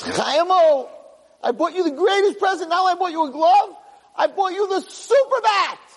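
mock, very high-pitched, thrilled and excited voice. Acting out a mother coming home to tell her son, mock-excited mother. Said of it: "She's all excited".

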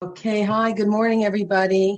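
hoarse, raspy morning voice. Speaker greets the audience after being introduced, raspy voice. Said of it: "a little bit uh, more raspy this morning".

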